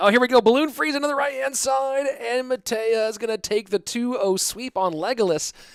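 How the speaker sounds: high, loud, excited play-by-play announcer call.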